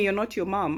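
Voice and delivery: ordinary talk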